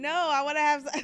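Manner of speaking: loud, fast, laughing mock protest in woman's voice.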